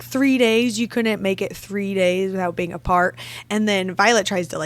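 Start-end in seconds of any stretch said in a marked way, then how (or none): none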